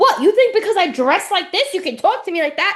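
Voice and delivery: put-on Long Island accent slipping out. Retelling a woman snapping at a man on a show, in a Long Island accent. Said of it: "The Long Island came out".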